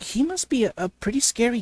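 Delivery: ordinary delivery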